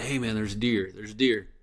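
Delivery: hushed, half-whispered, under the breath. Retelling spotting a deer from the hunting stand: imitating his own half-whisper. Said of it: "and I can kinda whisper".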